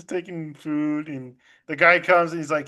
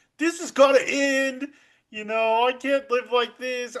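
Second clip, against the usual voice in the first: upset, worked-up, pitched-up outburst; 8 semitones higher than usual. Retelling a character's outburst from a show: imitating someone upset. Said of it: "all upset".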